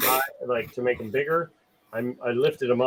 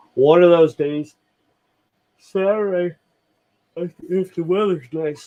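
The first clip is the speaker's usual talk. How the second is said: high voice, words stretched out by a yawn; 5 semitones higher, 7 dB louder than usual. A tired speaker keeps talking while yawning; talking through a yawn. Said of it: "Sorry for yawning".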